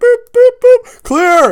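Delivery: loud, high mock heart-monitor beeps and clear call.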